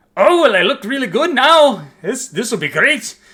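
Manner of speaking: bad put-on Scottish accent, very high, very loud, shrill. Voicing a character who tries his best at an accent, the speaker does a really terrible scottish accent. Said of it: "tries his best to do a really terrible Scottish accent".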